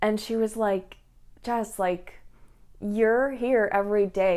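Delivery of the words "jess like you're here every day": ordinary delivery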